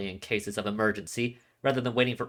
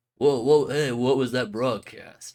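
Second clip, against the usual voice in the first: put-on surfer dude voice, louder; 4 dB louder than usual. Redoing a game line after being told it sounds more like surfer dude: Yamato voice, surfer dude style. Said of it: "more like Surfer Dude".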